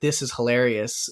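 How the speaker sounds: ordinary delivery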